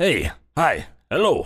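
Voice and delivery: put-on Russian accent, spoken with gusto. Apologizing first, the speaker tries a russian accent for the story: russian accent. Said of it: "if I can pull off this Russian accent".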